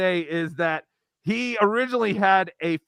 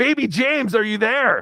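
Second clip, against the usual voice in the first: put-on shouting; 3 semitones higher, 3 dB louder than usual. Describing how a man calls out to Ray: imitating someone yelling. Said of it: "yelling at Ray".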